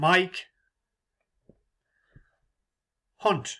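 very slow, deliberate, drawn-out delivery. Reading out a list of names, carefully saying the last one very slowly. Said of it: "I'm just going to say it very slowly".

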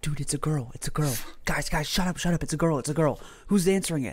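put-on teenage boys whispering back and forth. Retelling teenage boys behind a door, imitating teenage boys whispering. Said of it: "I hear them whispering".

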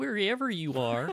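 put-on Minnesota accent. Repeating her line after asking why she has that accent, mock Minnesota accent. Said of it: "Why does she have a Minnesota accent?".

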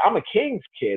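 puffed-up, vain, self-important preacher voice. Imitating how preachers sitting on thrones talk: imitating a vain preacher. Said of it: "They talk like this".

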